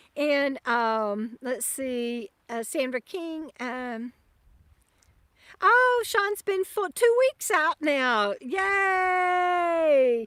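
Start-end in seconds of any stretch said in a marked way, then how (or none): 5.7-10.3 high, loud yell, "yay" drawn out. Talking with her dog Bandit nearby, yelling. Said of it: "I'm yelling".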